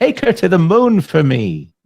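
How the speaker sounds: very high, sing-song, swooping put-on character voice. Answering a question about an imaginary friend: Richard Kind voice. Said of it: "let's see if I can get into my Richard Kind voice".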